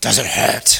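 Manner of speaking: evil, menacing, dark, low demonic voice. Retelling a voice on a 1 a.m. phone call: dark, demonic voice. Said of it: "it was a dark, demonic voice".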